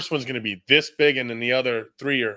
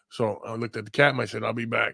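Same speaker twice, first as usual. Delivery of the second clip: ordinary delivery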